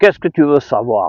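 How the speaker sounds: put-on southern French accent of Marseille. Retelling what a man at the druggists' union said on the phone, thick Marseille accent. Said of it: "le monsieur bien marseillais, avec son gros accent".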